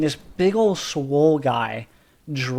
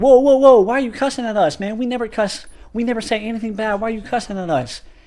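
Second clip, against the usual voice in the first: mock defensive, offended, high, indignant tone; 7 semitones higher, 4 dB louder than usual. Retelling how his group answered the coach who cussed at them, retelling a defensive protest. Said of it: "we get really defensive".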